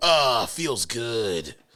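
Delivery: voice dropped deep, dead serious. Recalling a game moment, the speaker does Duke Nukem's deep serious voice.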